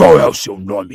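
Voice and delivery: growling. Reading a story aloud, a werewolf questioning a prisoner: growling. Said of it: "rosnou Greyback".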